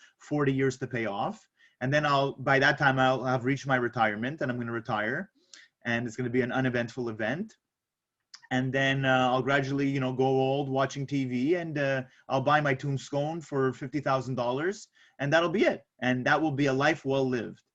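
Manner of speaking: ordinary talk, nothing marked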